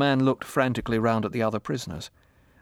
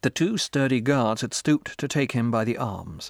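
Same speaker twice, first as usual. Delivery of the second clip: usual speaking voice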